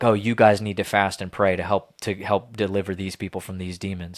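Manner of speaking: ordinary talk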